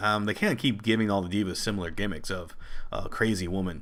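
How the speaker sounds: ordinary talk, nothing marked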